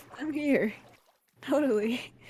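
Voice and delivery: tearful-sounding voice. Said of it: "you sound like you're crying".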